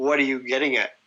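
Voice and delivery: put-on angry, irritated man voice. Retelling a confrontation, quoting the other man's reply: imitating an angry man. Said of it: "he's like getting angry".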